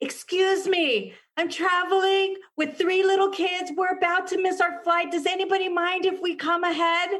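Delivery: very high, desperate pleading tone. A traveler retelling what they asked the people in line, imitating a desperate plea. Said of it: "the like desperation in my voice".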